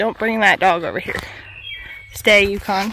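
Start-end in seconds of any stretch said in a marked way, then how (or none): none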